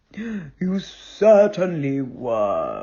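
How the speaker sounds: very low, soft growl, were stretched out. Narrator reading a story, Father Bear answering Goldilocks, Father Bear's soft growl. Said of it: "growled the Father Bear softly".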